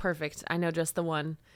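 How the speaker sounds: ordinary delivery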